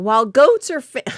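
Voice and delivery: voice breaking and pitching up on the word. Reading a story aloud alongside another speaker, voice cracking. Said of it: "my voice just cracked".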